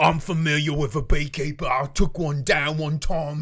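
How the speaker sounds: put-on New Zealand-Australian blended accent. Describing an imagined villain mini boss for a movie, voicing him: New Zealand-Australian accent. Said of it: "a kind of New Zealand Australian accent".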